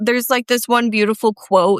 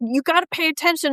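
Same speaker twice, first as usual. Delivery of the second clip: mock high-pitched yell; 8 semitones higher, 3 dB quieter than usual. Retelling fiddling with the camera during cattle work: imitating Aaron yelling. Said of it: "Aaron was always yelling".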